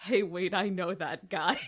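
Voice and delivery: loud, excited, sudden shout. Retelling watching a movie in the back seat: retelling own excited yell. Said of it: "I yelled".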